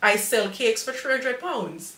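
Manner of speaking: plain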